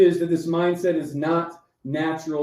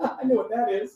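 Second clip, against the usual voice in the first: acted, pitched-up, amused know-it-all tone through laughter; 6 semitones higher, 3 dB quieter than usual. Retelling the wife's remark during a panic attack: imitating wife laughing while talking. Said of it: "your wife is sitting next to you laughing".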